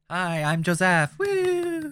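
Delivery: put-on very high, swooping, squealing, crazy baby voice. A podcast co-host introduces himself on air, in a crazy baby voice. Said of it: "I went with a crazy baby voice".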